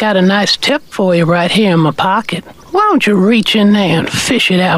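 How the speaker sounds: put-on creepy old-man character voice. Riffing on a whistling sound, doing the Family Guy creepy old man voice. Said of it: "Creepy old man".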